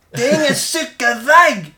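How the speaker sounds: put-on high, loud roar, old man voice. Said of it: "han vrålar".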